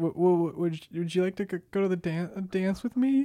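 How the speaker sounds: put-on stutter. Recalling asking a girl to the high school homecoming dance: retelling his own stutter. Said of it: "I stuttered".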